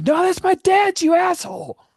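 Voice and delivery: very high, loud screamed outburst. Voicing a character who screams at a player for taking his helmet: screaming. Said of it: "he screams out".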